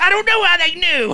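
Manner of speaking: squeaky, very high, loud put-on voice. Retelling what the man in the video said, imitating the man in the video. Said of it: "he goes".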